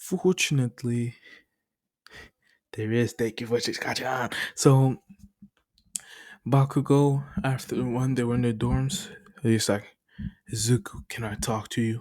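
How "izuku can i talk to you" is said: put-on serious tone. Retelling a scene where Bakugo asks Izuku to talk: Bakugo in a serious tone. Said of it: "In a serious tone".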